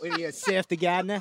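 put-on, fake Australian accent. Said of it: "I got a sweet Australian accent".

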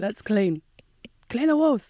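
put-on shout called out, pitch climbing throughout. Acting out telling everyone to clean the house: imitating own shouting. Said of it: "I'm shouting".

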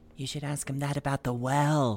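loud stage whisper. Voicing a character suggesting a question about the well: loud whisper. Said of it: "he whispers kind of loudly".

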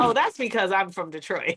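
ordinary talk, nothing marked

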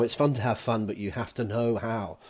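ordinary delivery

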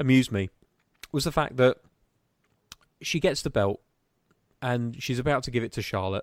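speaking with hiccups. Speaker explaining what amused them, interrupted by hiccups, speaking with hiccups. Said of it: "sorry, I got hiccups".

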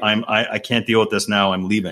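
imitated, put-on whispering. Retelling slipping out of a tense client call: imitating own whisper. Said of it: "I whispered into somebody".

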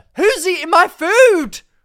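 shouting. Showing how to confront a food thief in the office: shouting. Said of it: "Shout it".

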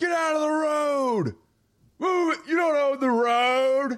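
play-acted furious, shrill, very high yell, "road" drawn out. Retelling what a driver yelled from his car, imitating an angry yell. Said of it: "I hear some guy yelling from his car".

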